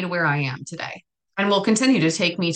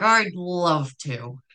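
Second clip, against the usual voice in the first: fake-nice, very slow, spoken through gritted teeth. Acting out their past self agreeing to a favor, retelling a gritted-teeth reply. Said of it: "with gritted teeth".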